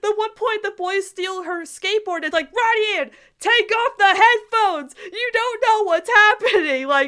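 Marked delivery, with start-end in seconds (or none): 2.5-6.9 loud yelling. Retelling watching the episode with friends: retelling a yell at the screen. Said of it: "we're just yelling".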